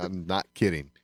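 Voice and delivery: ordinary talk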